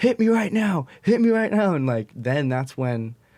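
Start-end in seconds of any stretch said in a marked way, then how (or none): 0.0-1.7 very high-pitched, furious screaming. Retelling a confrontation where a man screamed at them, retelling angry screaming. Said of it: "he was just screaming like".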